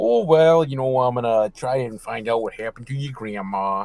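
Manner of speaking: put-on heavily laid-on Minnesota accent. Retelling a film's police officer talking to a boy: Minnesota accent like the Fargo cop. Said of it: "she literally has the Minnesota accent and is like".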